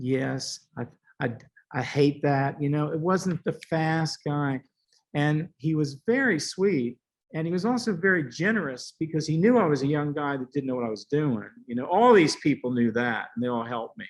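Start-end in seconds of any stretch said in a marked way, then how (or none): 0.0-2.6 very slow, unhurried, drawn-out speech. Recalling visiting his house, the speaker imitates John Duffy's slow talking. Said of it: "He even talked slower".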